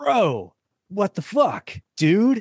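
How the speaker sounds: put-on casual American accent, swooping up high. Describing people with weird accents, speaker mimics two in a modern American accent. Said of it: "Like a total modern American accent".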